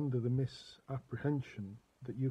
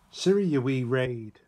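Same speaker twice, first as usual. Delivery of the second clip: attempted Northern Irish accent, much louder; 9 dB louder than usual. Talking to Siri, repeating the phrase it refused, in an attempted Northern Irish accent. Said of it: "That was Northern Ireland, supposed to be".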